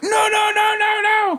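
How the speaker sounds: loud, high-pitched shout.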